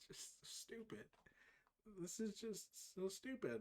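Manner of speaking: soft, unvoiced, exasperated whisper.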